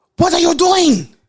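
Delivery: put-on very high, shrill, loud shout. Retelling a passenger's reaction to a turn: imitating a passenger yelling.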